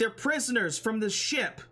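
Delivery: high-pitched, shouted yell. Voicing a character in a tabletop game scene, yelling out. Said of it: "he yells out and he's like".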